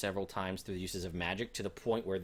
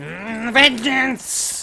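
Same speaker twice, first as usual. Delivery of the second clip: very high, very loud, shrill monster shriek; 17 dB louder than usual. Voicing a kobold shaman who shakes its staff at the party: kobold shaman yelling. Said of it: "he yells".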